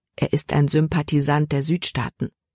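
ordinary delivery

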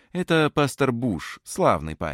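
ordinary talk, nothing marked

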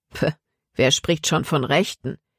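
ordinary delivery, nothing marked

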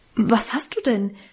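alarmed, startled, frightened. The pastor's wife asks the sobbing narrator what's wrong, alarmed. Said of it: "fragte auch seine Frau erschrocken".

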